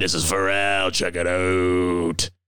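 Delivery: deep, dropped radio-style voice, drawn out. Joking about sounding like a morning zoo host, imitating Scott Farrell. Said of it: "Or I sound like Scott Farrell".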